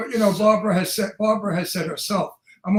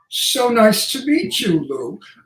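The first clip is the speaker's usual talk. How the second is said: put-on proper English accent; 3 semitones higher, 4 dB louder than usual. Demonstrating how the speaker sounds speaking proper English: proper English accent. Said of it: "if I speak proper English".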